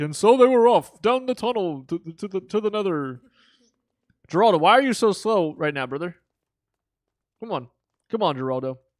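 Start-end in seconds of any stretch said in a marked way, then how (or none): 0.0-3.2 put-on old man voice, pitched up. Urging Geraldo on, the speaker narrates their trip in an old man voice. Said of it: "We need like an old man voice".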